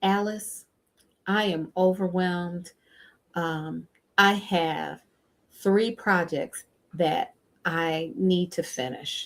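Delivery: kind of slow, unhurried, taking its time. Speaker demonstrating a line addressed to Alice, speaking slowly. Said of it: "I was saying it kind of slowly".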